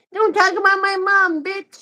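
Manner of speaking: very high, slow, mocking, patronizing kid voice. Reading a comment aloud in a patronizing kid voice. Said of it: "I'm gonna read that comment in a patronizing kid voice".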